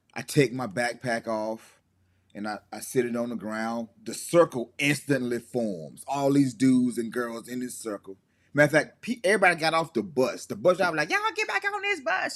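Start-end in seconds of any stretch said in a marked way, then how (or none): 11.1-12.4 very high, shrill screaming. Retelling how the bus driver ordered everyone back on: imitating the bus driver screaming. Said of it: "She just screaming".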